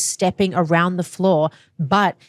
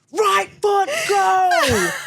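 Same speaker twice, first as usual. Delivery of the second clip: shrill, very high, acted yell with go drawn long. Retelling yelling steps into a dance partner's ear: imitating own yelling. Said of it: "yelling, not just talking".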